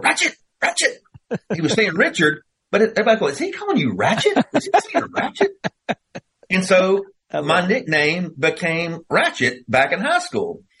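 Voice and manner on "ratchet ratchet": very high-pitched, cross, upset voice. Recalling a coach calling to him across the field, imitating a coach's high-pitched yell. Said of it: "he'd get a real high pitched voice, and he'd yell across the field".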